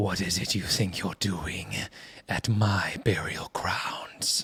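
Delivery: very quiet, low, hushed, echoing dream voice. Retelling a dream where she speaks, in an echoey dream voice. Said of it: "she in a very echoey, you know, your typical dream voice".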